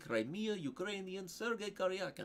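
put-on Ukrainian accent with stretched-out, elongated syllables. Speaker demonstrating Slavic accents, a Ukrainian accent with elongated syllables. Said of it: "they elongate more of their syllables like this".

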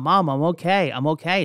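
ordinary delivery

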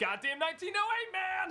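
mock frustrated tone. Podcasters joking about Cubs fans, one gives the fans' reply, mock-frustrated. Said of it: "podcasters mock Cubs fans' frustrated answer".

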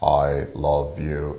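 very low, flat, robotic machine monotone. Showing how someone might say it impersonally to a spouse, in a robotic voice. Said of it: "like a robotic voice".

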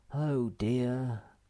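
with a sigh. On a long river trip, he speaks to his companions, sighing. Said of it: "sighed Moomintroll".

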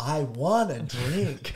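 very slow, drawn-out put-on Western accent. Retelling a Japanese man practicing a phrase, in a put-on Western accent. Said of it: "how to speak with like a Western accent".

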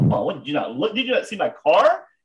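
mock high-pitched berating, scolding tirade. Retelling getting out of the car to berate a cyclist, acting out the berating. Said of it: "I just start berating this guy".

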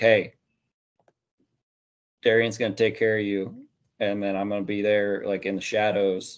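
usual speaking voice

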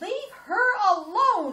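shrill, very high, full-volume loud scream. Recalling screaming up the basement stairs at him over Cindy, retelling a scream. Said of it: "I screamed up the stairs".

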